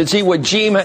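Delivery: normal talking voice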